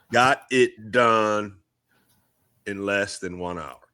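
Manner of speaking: slowed-down speech. Wrapping up the show, talking slow. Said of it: "I'm talking slow because I'm trying to not pause".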